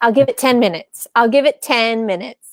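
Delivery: normal talking voice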